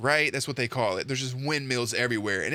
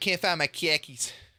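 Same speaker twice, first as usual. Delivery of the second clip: put-on Boston accent, khakis sounding like car keys; 4 semitones higher than usual. Showing how the word khaki sounds in Boston, in a Boston accent. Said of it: "sounds like car keys in Boston".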